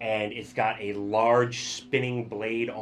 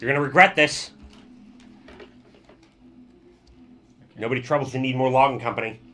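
loud, tiny little goblin voice; 3 semitones higher, 6 dB louder than usual. Voicing a goblin speaking from inside a machine, in a tiny goblin voice. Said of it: "you hear a tiny goblin voice from inside".

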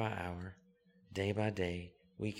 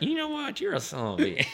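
shrill, very loud put-on country twang, words mashed; 10 dB louder than usual. Guest retelling how a colleague says a line to Jason, in a put-on country twang. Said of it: "in his country of country twang".

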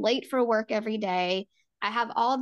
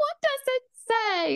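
very high, frantic, hysterical pitch. Retelling coming out with the pregnancy test, asking him what it says: retelling hysterical screaming. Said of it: "I'm like screaming hysterically".

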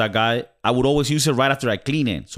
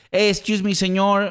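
pitched-up put-on Mexican accent; 8 semitones higher than usual. Retelling what a campus janitor said, imitating a Mexican accent. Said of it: "the guy is Mexican and has an accent".

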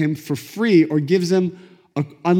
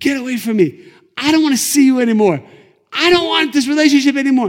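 mock, high-pitched angry screaming; 8 semitones higher, 4 dB louder than usual. Retelling a couple fighting outside a car, imitating the man screaming at her. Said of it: "he's screaming at her".

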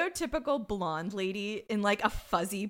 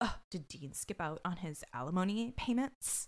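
imitated quietly angry voice; 2 semitones lower, 7 dB quieter than usual. Retelling a bartender questioned by cops, imitating quiet anger. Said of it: "quietly angry".

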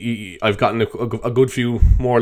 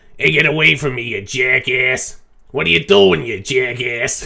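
stock put-on Italian American accent. Showing the accent he put on to amuse himself, put-on Italian or Irish American accent. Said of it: "like one of those Italian American or Irish American".

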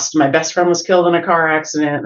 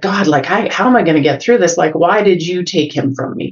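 re-enacted, acted-out angry delivery. Speaker recalls praying in church shortly after he died: retelling an angry prayer. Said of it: "I was angry".

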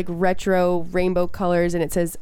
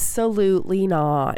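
ordinary talk

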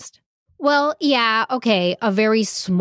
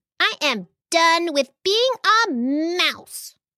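high, squeaky, indignant little angry outburst; 7 semitones higher than usual. Reading a story aloud, voicing the mouse who has had enough: squeaking angrily. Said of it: "she squeaked angrily".

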